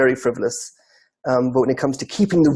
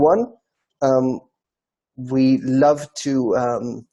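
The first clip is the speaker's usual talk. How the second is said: usual speaking voice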